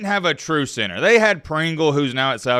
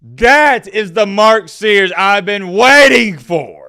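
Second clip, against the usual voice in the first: very loud, high, hyped cartoon voice shout; 6 semitones higher, 9 dB louder than usual. Hyping up Mark Sears for fellow Bama fans: SpongeBob character voice. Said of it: "I sound like that guy off of SpongeBob".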